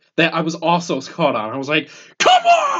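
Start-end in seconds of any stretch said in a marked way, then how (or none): 2.2-2.9 shouted at a very high pitch. Retelling being stuck on a stump while pushing a raft: retelling a yell. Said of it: "I literally yelled".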